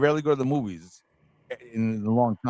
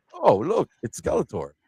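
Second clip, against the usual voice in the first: goofy, silly, daft and playful exclamation. Recalling how the original villainess would act goofy: imitating Evil-Lyn being goofy. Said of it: "she'd be all goofy".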